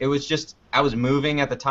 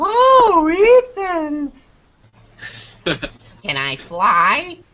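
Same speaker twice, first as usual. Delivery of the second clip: shrill, loud, swooping cartoon voice with stretched oh; 9 dB louder than usual. A speaker showing off the different voices they can do, in a Tooth Fairy voice. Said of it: "it's the Tooth Fairy".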